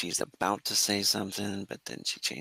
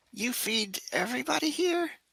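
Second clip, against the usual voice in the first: put-on very high, tiny young girl's voice. A little girl suddenly speaks up right next to you: little girl voice. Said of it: "This little girl voice comes".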